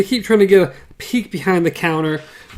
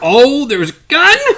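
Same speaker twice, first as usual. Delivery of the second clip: delighted, thrilled-to-death surprise, high and excited; 7 semitones higher than usual. Retelling how characters react to learning of a gun: imitating thrilled excitement. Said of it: "they're thrilled to death now".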